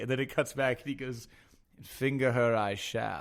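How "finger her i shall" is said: put-on very slow, archaic old English accent. Retelling a scene, the speaker quotes a man's line in an old English accent. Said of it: "doing this voice of like like an English, like old English".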